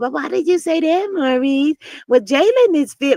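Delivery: put-on cutesy baby-talk voice. Acting out how she talks to him so he'll hear her out: put-on baby talk. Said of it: "she has to go with that baby talk".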